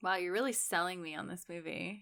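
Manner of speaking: tired, quiet, dry and faintly sarcastic delivery. Reacting to someone describing a film: sounding a little sarcastic. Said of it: "you sounded a little sarcastic".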